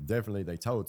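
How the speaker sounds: plain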